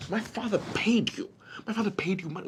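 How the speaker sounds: said softly under the breath, slightly high. [name], just told he's not on the team, answers Daybreak quietly.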